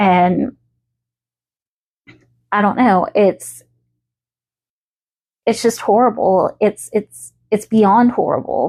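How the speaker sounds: voice strained, fighting back tears. Speaker recording this, talking about something awful, fighting back tears. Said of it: "fighting back my tears right now".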